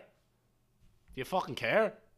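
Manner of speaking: put-on strong Belfast accent. Asking another speaker if they care, in a full Belfast accent. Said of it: "possibly just went full Belfast".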